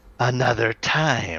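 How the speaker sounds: gritty, gravelly throat. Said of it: "says in her gravelly voice".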